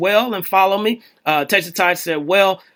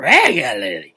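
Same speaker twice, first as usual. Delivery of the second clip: put-on drunk slur, regularly ending smeared as lelely; 10 semitones lower than usual. Thanking a listener for a nice comment: mock drunk voice. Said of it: "I said that like somebody, mama that's drunk".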